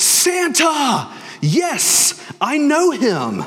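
bad, very high, swooping, overjoyed scream. Announcing Santa's visit tomorrow, quoting the movie: bad Buddy impression, elated scream. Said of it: "He's elated and he screams".

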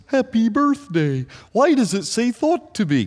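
very high-pitched cartoon snowman character voice. Voicing the listener's imagined question in a Frosty the Snowman voice. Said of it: "in your Frosty the Snowman voice".

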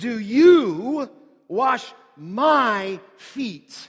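strong stress on "you", rest said plainly. Reading a verse from the text aloud, with stress on you. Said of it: "read it this way, ... You is what we would say in the language emphatic".

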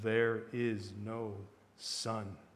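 hushed, grave, soft, deep and very slow. A witch repeats her claim to four listeners, in a softer and deeper voice. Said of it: "She repeated in a softer and deeper voice".

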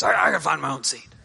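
gruff, dog-like, barky, rough-edged voice. Retelling what a man said to the usher, imitating a barky voice. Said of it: "kind of in a little bit of a barky voice".

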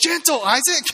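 put-on, very high-pitched yell. Retelling being bitten by a one-year-old, imitating own yelling. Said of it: "and so I'm yelling".

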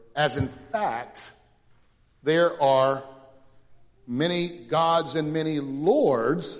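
slow, sing-song, ironic scare-quote tone. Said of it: "he kind of says that with quotation marks".

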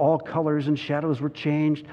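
ordinary delivery

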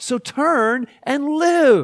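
high, slow pleading voice.

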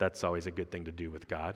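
deadpan, dry sarcasm with flat pitch. Commenting on Peter rebuking Jesus while reading Mark: sarcastic. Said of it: "I say sarcastically".

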